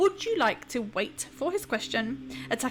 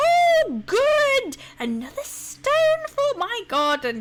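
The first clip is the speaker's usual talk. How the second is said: giggling, foolish character voice, high and loud; 12 semitones higher, 7 dB louder than usual. Narrating a scene, voicing a giggling man who steps out from behind Anita, in a high-pitched voice. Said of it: "In a high-pitched voice he says".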